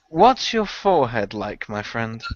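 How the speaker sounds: softly spoken, hushed voice. In a role-play game, an unarmed character walks over to another: soft voice. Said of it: "say to Kabachi in a soft voice".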